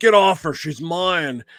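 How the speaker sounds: mock drunken man's slurring voice. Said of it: "all drunk and shit".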